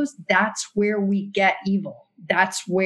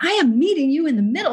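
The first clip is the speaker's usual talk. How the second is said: mock exasperated, high, frustrated yell; 7 semitones higher, 3 dB louder than usual. Retelling how he finally yelled to them, imitating a frustrated yell. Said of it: "in frustration yelled".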